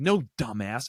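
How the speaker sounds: put-on angry voice. Retelling a father's words while starting the mower: imitating an angry father. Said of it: "And he's so angry".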